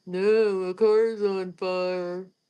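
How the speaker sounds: very slow mumble, as if mouth full of marbles. Retelling a man's reply to a woman, imitating his mouthful-of-marbles mumbling. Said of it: "talking like he had a mouthful of marbles".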